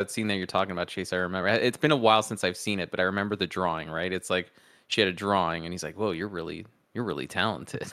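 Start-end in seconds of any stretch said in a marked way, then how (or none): 6.0-7.9 mock weird, creepy delivery, quieter. Retelling a movie scene where a man praises a drawing: imitating a weird, creepy way of speaking. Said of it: "He just says it in a weird, creepy way".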